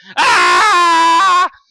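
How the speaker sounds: sudden, high-pitched, loud shout.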